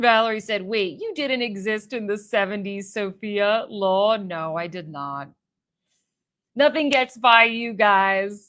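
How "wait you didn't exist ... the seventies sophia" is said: plain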